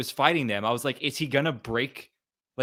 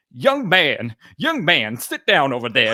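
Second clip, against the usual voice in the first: swooping put-on voice of an old woman; 7 dB louder than usual. Quoting a couple's role-play scene from a TV episode: put-on old woman voice. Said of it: "She does this, like, old woman voice".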